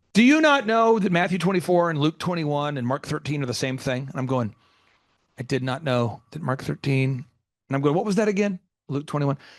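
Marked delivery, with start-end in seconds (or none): none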